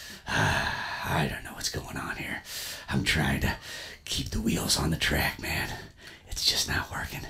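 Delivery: speaking in a whisper. Speaking into the ear of a listener wearing headphones, whispering. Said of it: "I just wish you'd stop whispering".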